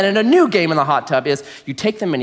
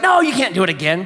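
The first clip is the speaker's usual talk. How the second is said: imitated grumpy tone. Retelling refusing a request to flush the toilet again: retelling own grumpy reply. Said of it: "I was grumpy or something".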